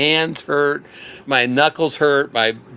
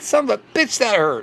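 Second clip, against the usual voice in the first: half-laughing voice, pitched up; 7 semitones higher than usual. Retelling own reaction after being tased, imitating laughing while cursing. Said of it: "I was kinda laughing, going like".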